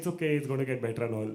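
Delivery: ordinary talk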